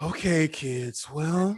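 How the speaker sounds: put-on grave, solemn announcer tone. Retelling how the school principal came on to address the kids: imitating Miss Vetter's solemn voice. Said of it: "She would come on with a solemn voice".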